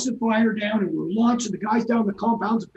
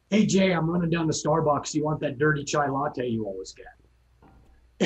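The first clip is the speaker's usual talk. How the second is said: mock easygoing, cool, calm, relaxed casual chatter; 6 semitones lower, 3 dB quieter than usual. Picturing the pilot offering a coffee run: imitating a cool, calm voice. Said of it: "as coolly and calmly as if she was saying".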